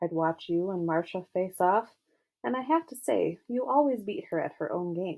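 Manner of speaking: ordinary delivery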